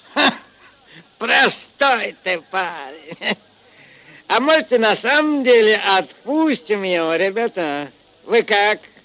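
laughing through the words. He teases the captured young man before the men at the table, chuckling. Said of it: "посмеиваясь в усы".

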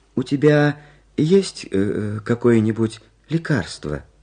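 unsure, tentative, uncertain, hesitant tone. Malysh asks Karlsson, who has just groaned at him; asking uncertainly. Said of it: "неуверенно спросил".

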